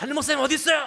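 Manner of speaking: very high, shrill, high-pitched shouted yell. Recounting a person who burst in demanding the senior pastor, retelling someone yelling. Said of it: "막 소리를 지르는 거예요".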